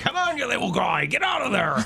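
put-on high Scottish accent shifting into pirate voice.

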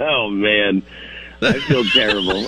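words spoken through laughter. A caller who must apologize to his roommate explains: laughing while speaking. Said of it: "You're laughing about it".

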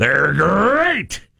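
laid-back, rough, cool cartoon tiger voice. Retelling a meeting about a catchphrase, the speaker says it in a cool tiger voice. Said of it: "The tiger will say it really cool".

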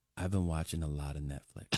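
confiding, hushed stage whisper. Retelling how a stranger on a plane leaned down: imitating a half-whisper. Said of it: "he whispers in my ear so that nobody else can hear".

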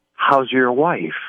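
eerie whispered delivery. Host showing a caller how to say the line: creepy whisper. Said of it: "whisper it. Make it creepy".

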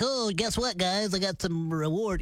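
play-acted, slow, offhand, toothless, overly casual delivery. Mocking how the reward was announced, imitating a too-casual announcement. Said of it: "You're just like".

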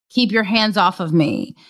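ordinary delivery

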